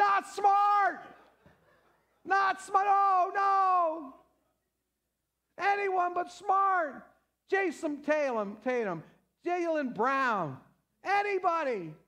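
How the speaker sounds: play-acted high pleading screaming, drawn-out "oh". Recounting a game's last shot, the speaker re-enacts retelling their own screaming. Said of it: "I was screaming".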